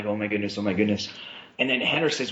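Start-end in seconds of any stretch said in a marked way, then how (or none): 0.0-1.1 put-on trembling, jittery, nervous fretting. Retelling walking to the middle when called on: retelling shaking with nerves. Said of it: "and I'm shaking".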